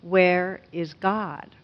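severe, stern, demanding tone. Retelling a pastor repeating his question to a boy, in a sterner tone. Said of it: "repeats the question even with a sterner tone".

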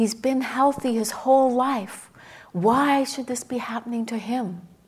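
put-on loud, furious, raging scream. Retelling a friend's hospital story about an elderly woman: imitating a woman screaming in rage. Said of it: "She was screaming".

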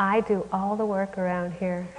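ordinary talk

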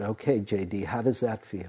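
plain

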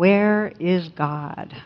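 mock severe, stern preacher voice. Telling a story, the speaker quotes the clergyman questioning a boy: mock-stern clergyman. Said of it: "says sternly".

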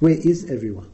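normal talking voice

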